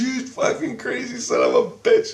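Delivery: mock angry swearing outburst, very high-pitched. Retelling a story where the wife swears at him: imitating wife swearing at him. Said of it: "she's swearing at me like this".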